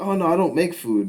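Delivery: put-on Middle Eastern accent. Retelling what a food vendor said: imitating a Middle Eastern accent. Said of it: "it's just, like, this accent".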